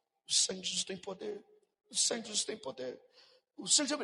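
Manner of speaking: barely-there, low, hushed murmur under the breath. Retelling what they said at the time, speaking very softly. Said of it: "Eu baixinho assim, ó".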